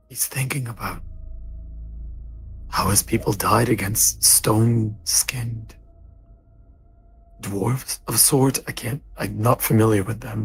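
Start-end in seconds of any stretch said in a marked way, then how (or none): 0.1-8.6 whispering in a character voice. Whispering to another character behind Gallo: whispering in character. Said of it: "I'm gonna whisper to him".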